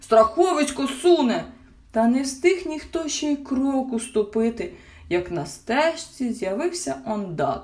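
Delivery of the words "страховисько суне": wild, high, wailing yell. Narrator reads a father calling to the group on the path, yelling. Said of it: "заволав тато мумітроля".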